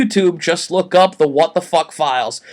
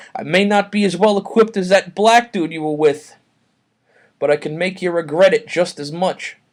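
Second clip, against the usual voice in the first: ordinary talk, nothing marked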